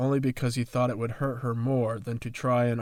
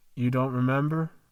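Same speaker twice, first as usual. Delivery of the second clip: plain reading voice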